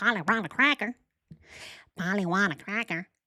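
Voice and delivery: squawky, birdlike parrot voice. Mocking how a woman sounds, imitating a parrot. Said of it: "Why does she sound like a parrot?".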